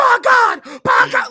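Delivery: very loud, high, drawn-out, slow ringside announcer bellow. Imitating an overexcited basketball announcer: j.r. commentary voice. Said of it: "he's like J R commentary".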